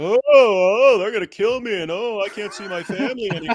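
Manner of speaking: fake sobbing. Mocking people who are emotional and crying: mock crying. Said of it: "Sick of emotions, of crying".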